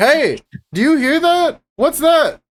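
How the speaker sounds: very high, rising, climbing yell. Casting a spell to talk to a bear, yelling at the bear. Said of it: "yell at the bear".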